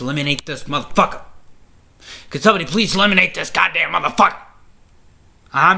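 heated, riled up. Watching a wrestler eliminate people, he gets riled up: heated, pissed off. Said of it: "I'm fucking heated because I'm so pissed".

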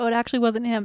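ordinary delivery

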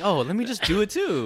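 mock very high, naive, innocent little voice. Teasing a friend by acting out his naive thinking: imitating an innocent tone. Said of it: "how innocent you were thinking".

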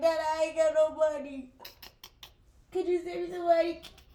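put-on tearful, fake crying voice. Retelling how she begs her dad for money, fake crying. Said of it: "be crying to my daddy and my brother like".

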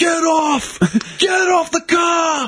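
shrill, very high screaming shout. Retelling how a cousin screamed at a driver, retelling a scream. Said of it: "Like screaming at him".

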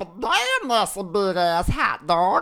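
slow, high put-on cartoon character voice. Others egg the speaker on and he performs a character impression. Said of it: "That was pretty spot".

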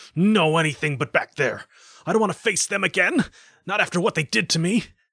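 high, loud shout. Narrator voices the man's reply to being sent back to Earth, shouting. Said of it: "He shouted".

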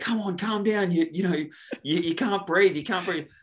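mock yelling, very high-pitched. Recalling being locked in a ride beside her, retelling a yell. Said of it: "So now I'm yelling at her".

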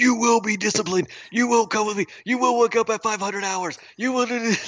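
mock drill sergeant yelling, very high and barking. Describing a drill sergeant brought on stage, imitating a drill sergeant yelling. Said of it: "start yelling at them".

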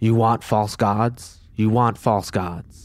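low, threatening, snarling growl. Game master voices Sazette grabbing the elf boy: Sazette growling. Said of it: "growls at him".

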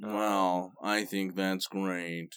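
put-on flat monotone. Showing a listener how the TV show host always talks, in a flat, monotone Ben Stein voice. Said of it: "He always talks like this".

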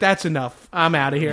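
ordinary talk, nothing marked

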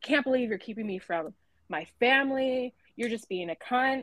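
play-acted furious, indignant, accusing angry outburst. Retelling what a man stopped from crossing said: imitating an angry man. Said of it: "he got so mad".

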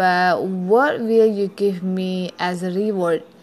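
ordinary delivery

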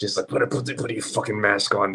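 mock muttering under the breath. Retelling how a man cussed them out in czech, retelling muttered cussing. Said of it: "just under his breath".

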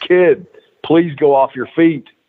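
urgent, held-in scream at top of lungs. Retelling what Abdullah yelled after a chop call: imitating Abdullah screaming. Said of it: "he screamed at the top of his lungs".

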